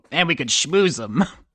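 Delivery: fake goblin creature voice. Narrating a fantasy game, the speaker answers as Schmigglesby in a goblin voice. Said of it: "the goblin says".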